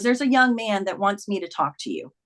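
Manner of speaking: plain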